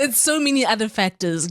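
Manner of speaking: talking through laughter.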